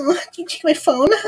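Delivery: shrill, very high, mocking copycat echo. Repeating back the other speaker's question: mimicking the other speaker. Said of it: "are you mimicking me?".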